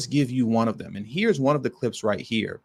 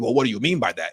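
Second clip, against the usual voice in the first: very condescending, talking down as if to someone dim. Retelling how Bernie Sanders answered reparations questions: imitating Bernie Sanders condescendingly. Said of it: "In a very condescending fashion".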